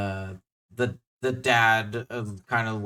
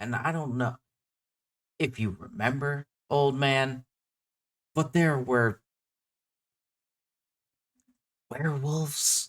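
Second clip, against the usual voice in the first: confiding, hushed stage whisper; 3 semitones higher than usual. Voicing a townsman who reminds an old man about werewolves: hushed tone. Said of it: "he says in, like, a hushed tone".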